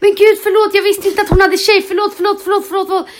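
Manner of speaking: frantic, panicked, high and loud. Retelling a guy who gets confronted and apologizes, imitating his stress. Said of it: "den här killen får sån stress och bara".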